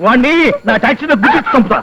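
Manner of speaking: plain reading voice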